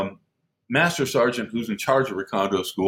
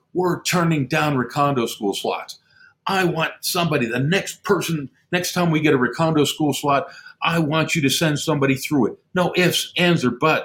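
heated, firm ranting, half-yelled; 4 semitones higher than usual. Retelling how a superior came up demanding a school slot: imitating someone screaming. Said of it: "he's screaming at me".

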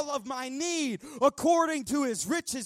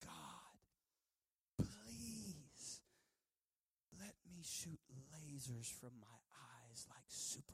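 put-on slow, earnest, heartfelt pleading, "please" stretched out; 13 semitones lower, 25 dB quieter than usual. Retelling a childhood prayer to Jesus: imitating own earnest pleading prayer. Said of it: "just pleading with Jesus".

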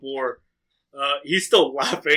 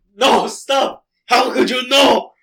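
high shouting while laughing helplessly and wildly; 9 semitones higher, 6 dB louder than usual. Narrator voices a character who begins laughing like crazy: laughing crazily while yelling. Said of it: "He begins laughing like crazy and he yells".

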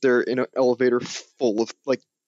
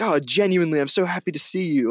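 put-on fake French accent; 5 semitones higher than usual. Recounting a scene from a film, quoting a man greeting someone warmly, doing an imitation of a French accent. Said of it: "his French accent is so funny too".

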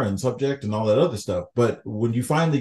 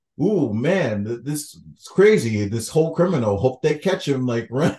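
ordinary delivery

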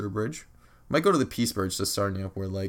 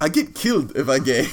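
put-on very loud, heavy, thick Russian accent; 6 semitones higher, 8 dB louder than usual. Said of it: "In his thick Russian accent".

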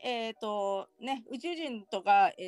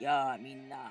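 put-on voice, much lower and slower; 8 semitones lower, 3 dB quieter than usual. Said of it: "真似して低い声で".

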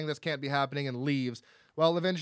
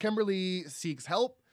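plain

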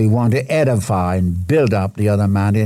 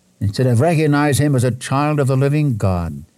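plain

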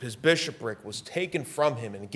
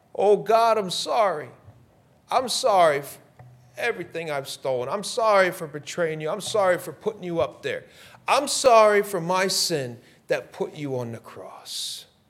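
high-pitched, pleading, repentant begging voice; 6 semitones higher, 4 dB louder than usual. Imagining Judas at the foot of the cross: Judas pleading for mercy. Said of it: "asked Christ for mercy, for forgiveness".

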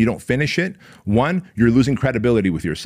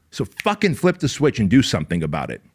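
ordinary talk

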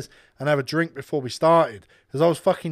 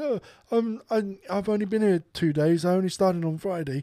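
play-acted whimpering while talking; 3 semitones higher than usual. Speaker retells a man answering a woman screaming at him: imitating whimpering. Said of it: "He's now whimpering the way he's talking".

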